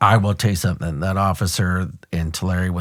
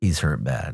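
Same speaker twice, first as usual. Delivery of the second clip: quiet, hushed stage half-whisper; 5 semitones lower, 5 dB quieter than usual. Retelling words once half-whispered into a supervisor's ear: imitating a half-whisper. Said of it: "whisper in his ear".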